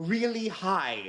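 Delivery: irritated droid voice, high and annoyed. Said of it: "he's just annoyed no one's listening to him".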